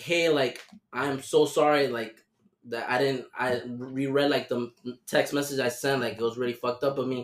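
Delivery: plain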